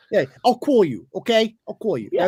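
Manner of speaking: New York accent with rounded vowels. Comparing regional accents, speaker imitates how people in new york talk; new york accent. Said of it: "That's New York".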